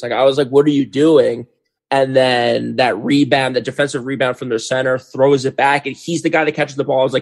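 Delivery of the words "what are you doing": put-on loud screaming and yelling. Retelling watching a game, imitating own past screaming at the tv.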